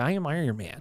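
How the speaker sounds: soft, chill, laid-back surfer-dude delivery. Joking with a co-host about an actor's voice, Robert Downey Jr. surfer-dude voice. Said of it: "that same sort of like surfer dude voice".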